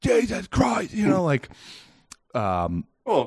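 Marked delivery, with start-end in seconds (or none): 0.0-0.9 shrieking, very high scream. Retelling being swarmed by bees, the speaker reenacts: retelling his own scream. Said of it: "now I'm like screaming at this point".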